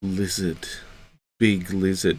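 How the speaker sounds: starry-eyed, starstruck cat voice. Voicing the pet cat staring at a lizard: voicing Hades the cat, starry-eyed. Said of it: "Hades mostly just looks at him and he's like".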